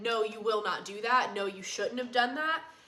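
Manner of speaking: put-on firm, scolding tone. Retelling correcting a horse, imitating a firm scolding. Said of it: "I can pretty firmly be like".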